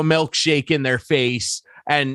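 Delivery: plain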